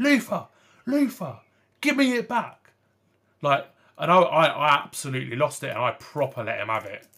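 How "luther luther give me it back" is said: put-on scream, higher and louder. Retelling how someone screamed for the ball back: imitating someone screaming. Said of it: "he was screaming".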